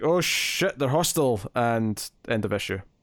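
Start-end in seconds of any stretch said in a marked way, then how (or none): none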